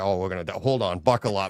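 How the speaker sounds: put-on Boston accent, airline pilot voice. Retelling a comedian's bit about a pilot: imitating a Boston-accented pilot. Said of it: "It was the Boston accent".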